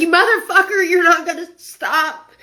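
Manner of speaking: half-voiced outburst while crying. Retelling yelling at a driver who was going to keep driving: retelling a scream. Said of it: "start screaming and crying".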